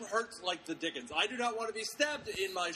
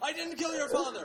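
high, yelled mock shout; 8 semitones higher, 4 dB louder than usual. Retelling a movie fight scene, imitating a yell. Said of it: "he yells out".

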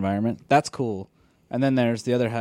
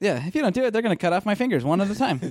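super positive, upbeat, higher pitch; 11 semitones higher than usual. Acting out a captive delivering the captors' ransom message, in a super positive tone. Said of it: "say whatever their message is in like a super positive tone".

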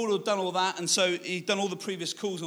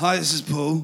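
loud, curt, cocky put-on older voice; 2 semitones lower, 7 dB louder than usual. Retelling disguising the voice so they couldn't tell it was them: put-on older, cocky voice. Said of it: "sound older, more abrupt, and cocky".

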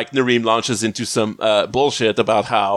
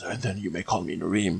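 put-on breathy voice, lower and quieter; 4 semitones lower, 11 dB quieter than usual. Retelling how Narim answers Sam, the speaker does a breathy Narim voice. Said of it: "the very, like, breathy voice and says".

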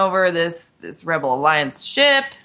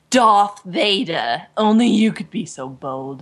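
very slow, dragged-out fake British accent. Quoting a film line after the fake British accent is mentioned: Leia's fake British accent. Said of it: "and her fake British accent".

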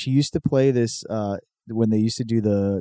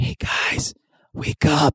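hushed, very slow, very drawn-out whisper; 5 semitones higher than usual. Retelling a comedy sketch, the dad waking his kids: imitating a whispering dad. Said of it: ""Why are you whispering?"".

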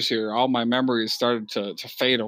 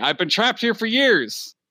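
very loud, high voice, pitch climbing throughout; 10 semitones higher than usual. A man reads a check written on a napkin, then says it very loudly. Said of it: "he says very loudly".

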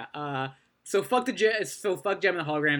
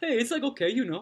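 bad put-on Jamaican surfer accent, pitched up; 6 semitones higher than usual. Retelling how a surf-shop greeter welcomes visitors, in his fake jamaican accent. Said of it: "what even is that accent?".

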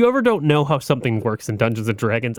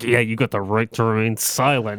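mock angry cartoon father voice; 3 semitones lower than usual. Praising a voice actor's delivery to a co-host, do a mock-angry Homer voice. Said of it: "he's got that angry tone".

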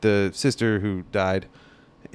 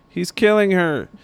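imitated kid scream, higher; 9 semitones higher than usual. Retelling a scene where a kid sees a sister run over: imitating a kid screaming. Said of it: "some kid screams".

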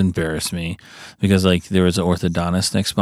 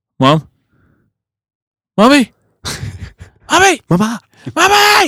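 put-on very high, sing-song, drawn-out childlike calling scream; 6 dB louder than usual. Speaker retells losing their mom in a store as a child: retelling screaming for mom. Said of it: "And I like scream".

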